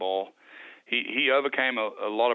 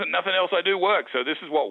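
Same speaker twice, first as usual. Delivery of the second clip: put-on brisk, fast, up-tempo speech; 8 semitones higher than usual. Retelling how Pat explains his method: imitating Pat's up-tempo talk. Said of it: "that's how Pat talks".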